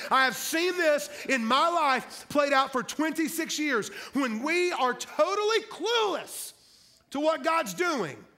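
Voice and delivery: high, loud, fired-up preaching. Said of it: "I'm getting fired up".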